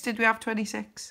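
plain

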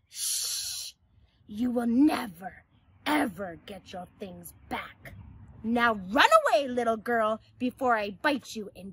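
growling dog character voice. Mr. Dog answers Salma, who begs for her things back, growling. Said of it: "Mr. Dog growled".

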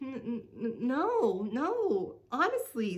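stuttering. Celeste answers Trixie, who accuses her of hiding food: stammering. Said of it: "Celeste stammered".

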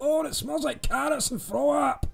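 Scottish accent impression. Recalling the end of Austin Powers, quoting Fat Bastard in a Scottish accent. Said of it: "Mike Myers' Scottish accent".

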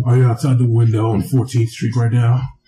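put-on very low, deep voice. Imitating the caller greeting Greg: Jim Florentine voice. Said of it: "But that's Jim Florentine voice".

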